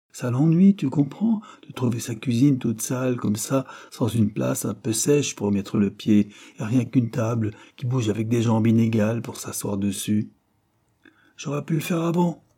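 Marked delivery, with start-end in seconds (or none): 11.3-12.3 loud, high, shouted outcry. Narrator reads a woman's line in a story, shouting. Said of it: "cria Madame Cartier".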